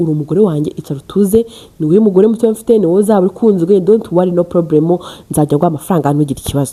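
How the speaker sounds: ordinary talk, nothing marked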